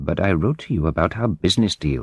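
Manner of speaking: ordinary delivery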